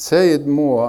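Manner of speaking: ordinary talk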